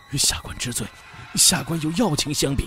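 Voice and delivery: shaky, trembling, quavering delivery. Reading a story, the narrator voices an official pleading his case: trembling voice. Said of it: "黄金林颤声申辩".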